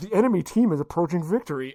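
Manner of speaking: plain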